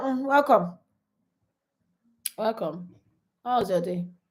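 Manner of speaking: unsmiling, no smile in the voice. Showing how someone opens the door without a smile: unsmiling welcome. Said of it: "you just open door".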